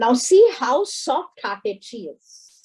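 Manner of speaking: ordinary talk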